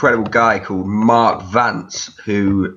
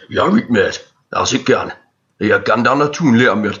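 put-on northeastern American accent. Doing an impression of a girlfriend's dad from Byker: imitating a girlfriend's dad. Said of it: "I'll do my girlfriend's dad".

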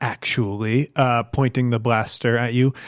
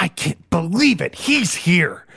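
pure, blinding rage, pitched up; 6 semitones higher than usual. Voicing a character who has just heard a hated name, in pure blinding anger. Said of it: "in pure blinding anger".

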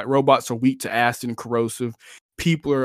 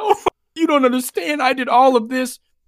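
mock tearful pleading, higher and louder; 13 semitones higher, 5 dB louder than usual. Imitating a game character begging to be spared: imitating crying, begging. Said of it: "'cause he's crying, begging you to spare his life".

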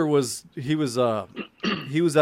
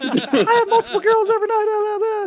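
very high-pitched put-on persona voice; 4 dB louder than usual. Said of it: "the same Pretty Ricky voice".

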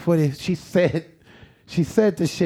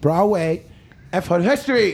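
put-on rushed, fast-talking delivery. Retelling what a woman said when asked for an address: imitating someone talking fast. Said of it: "she said it so fucking fast".

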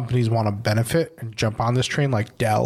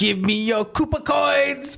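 put-on very high-pitched, slow old-lady voice; 13 semitones higher than usual. Retelling a movie scene where an old lady holds someone at gunpoint: imitating the old lady. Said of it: "She's like".

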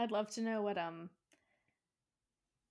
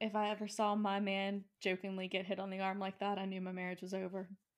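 ordinary delivery

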